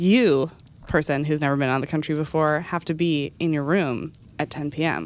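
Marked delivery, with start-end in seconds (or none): none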